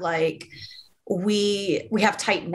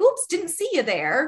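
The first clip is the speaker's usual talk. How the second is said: mock bright, chirpy, cheerful tone, very high; 9 semitones higher than usual. Retelling what the truck driver said after the crash: imitating someone smiling. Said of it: "all smiling".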